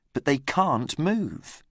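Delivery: plain reading voice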